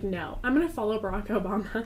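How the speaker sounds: plain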